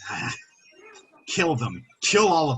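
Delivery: muttering a curse under the breath. Voicing a robed figure ordering an attack: cursing under his breath. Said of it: "curse under his breath".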